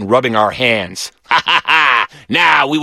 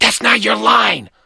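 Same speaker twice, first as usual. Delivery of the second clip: hissed words, pitched up; 9 semitones higher than usual. Reading a story, after Philip changes his line, Glenn hisses at him. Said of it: "Glenn hissed".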